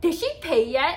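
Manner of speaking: very loud, booming, big, high voice. Retelling what someone asked at the reception desk, in a big voice. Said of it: "Like in a big voice".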